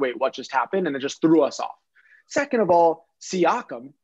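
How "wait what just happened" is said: ordinary talk, nothing marked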